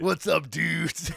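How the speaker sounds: raspy, loud wrestler-like shout. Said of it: "Talks like Macho Man".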